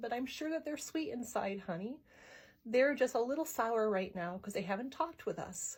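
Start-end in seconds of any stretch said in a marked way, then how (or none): none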